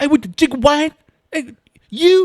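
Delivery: put-on loud Baltimore accent yelling. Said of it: "how you think they sound if they get in arguments".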